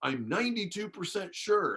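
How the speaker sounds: very high, eager, excited voice. Recounting a surprise phone call from a man, retelling an excited caller. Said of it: "And he was all excited".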